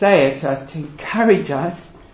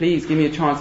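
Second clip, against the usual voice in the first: acted, mock pleading, begging tone. Retelling the parable of a servant pleading with the man choking him, acting out begging. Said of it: "he was begging him".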